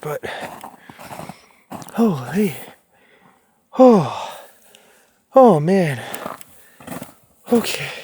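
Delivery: out of breath, winded delivery. Speaker reaching the crossroads with viewers, out of breath. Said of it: "I need to catch my breath for a second".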